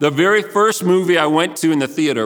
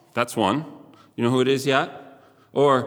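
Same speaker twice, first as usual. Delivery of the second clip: usual speaking voice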